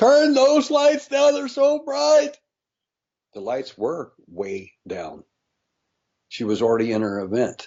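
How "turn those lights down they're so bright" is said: very high-pitched, shrill screaming. Recounting what a woman screamed once the speaker started talking to her: imitating someone screaming. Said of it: "she started screaming".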